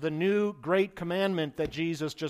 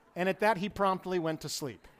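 ordinary talk

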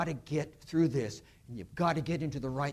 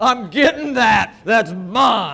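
put-on very loud, violent, vicious, shrill toddler yell; 8 semitones higher, 15 dB louder than usual. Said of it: "it was just vicious, violent".

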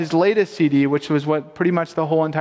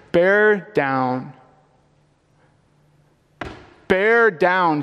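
acted, firm, commanding, fully in charge authoritative tone; 2 semitones higher than usual. Retelling what she kept saying while the child was born, imitating an authoritative command. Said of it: "she said in an authoritative voice".

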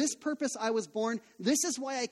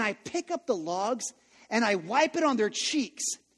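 ordinary delivery

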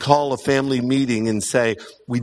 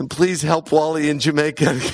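tearful weeping, sobbing delivery. Retelling a child's prayer after a spanking: imitating someone weeping. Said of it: "And he's weeping".

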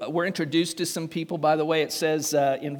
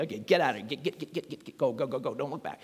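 hurried, urgent, rushing delivery; 2 semitones lower, 6 dB quieter than usual. Retelling angels telling Lot's family to leave: imitating a hurried angel. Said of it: "they're always hurrying people along".

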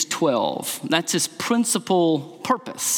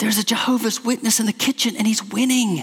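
whispered delivery; 5 semitones higher than usual. Retelling a woman whispering to her pastor, imitating a whisper. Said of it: "why are you speaking in a whisper".

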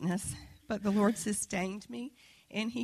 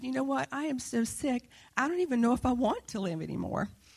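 crying, tearful speech; 3 semitones higher than usual. Retelling what she said to her driver in hospital: retelling her own tearful words. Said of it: "I was just crying".

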